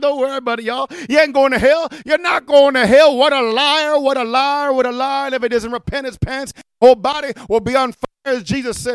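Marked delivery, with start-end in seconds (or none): 0.0-3.2 loud, mock chuckling all through the words. Imitating a preacher addressing a dancing crowd, imitating laughing while talking. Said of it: "And he kept laughing".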